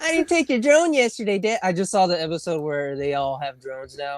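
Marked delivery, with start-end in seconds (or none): 0.0-1.6 put-on voice, pitched very high. Asked by the other speaker for a line: Butters voice. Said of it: "what do you want me to say as Butters?".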